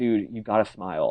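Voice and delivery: ordinary talk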